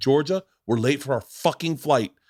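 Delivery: put-on yelling, scolding tone. Retelling a security line scene, to a daughter: imitating himself yelling. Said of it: "And now you're yelling at her".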